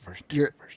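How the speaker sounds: muttering under breath. Retelling correcting a colleague who kept saying two point oh: imitating muttering under breath. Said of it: "under my breath".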